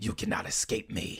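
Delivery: whisper in a little squinty voice. Trying out a voice for Gas, a little squinting voice. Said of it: "a little squinting voice like that".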